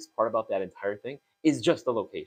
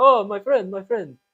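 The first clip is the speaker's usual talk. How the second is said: awful fake Russian accent, very loud, high, shrill; 10 semitones higher, 8 dB louder than usual. Retelling guys stopping them in the street: really terrible Russian accent. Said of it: "really terrible Russian accents".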